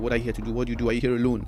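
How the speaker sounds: usual speaking voice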